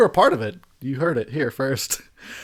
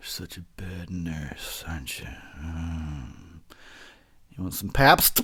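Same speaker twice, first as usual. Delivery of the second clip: very low, deep, slow, creepy murmur with drawn-out "um"; 8 semitones lower, 6 dB quieter than usual. Talking to a nurse during a sponge-bath bit, in a creepy voice. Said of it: "Gets even creepier and just creepier".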